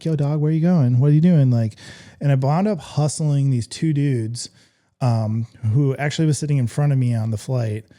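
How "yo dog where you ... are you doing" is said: fast, chirpy, chirping calling out. Stuck in Reno, retelling chirping at everybody in the baggage claim area. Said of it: "I just started chirping at everybody like".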